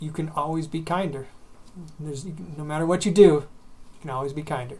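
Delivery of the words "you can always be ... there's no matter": plain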